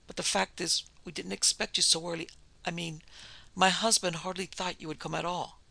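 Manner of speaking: plain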